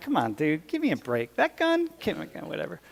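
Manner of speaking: acted, swooping, dismissive scoffing laugh-talk. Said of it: "I'm la-".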